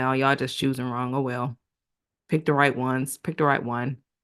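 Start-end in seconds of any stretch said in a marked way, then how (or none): none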